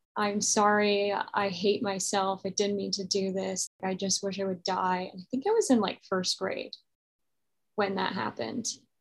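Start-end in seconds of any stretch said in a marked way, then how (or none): none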